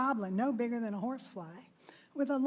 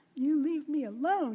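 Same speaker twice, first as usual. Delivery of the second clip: tiny, squeaky, frightened goblin voice; 4 semitones higher, 3 dB louder than usual. Reading a story, voicing the goblin shaking with fear, squeaked. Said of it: "he squeaked".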